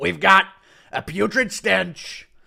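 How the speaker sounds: very loud, rough, slow put-on voice, belted out. Impression of Trump deporting him: Trump impression. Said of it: "Impression of Trump deporting him".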